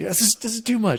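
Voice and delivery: very high, panicky, panicked freak-out. Retelling how a gaming partner always choked: imitating friend freaking out. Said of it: "just freak it out".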